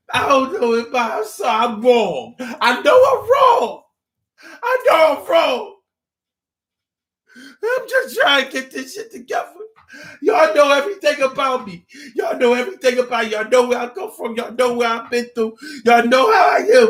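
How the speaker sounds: mock very high tearful crying, pleading. Acting out a stalker who comes to the mother crying: imitating a man crying and pleading. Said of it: "come to you crying".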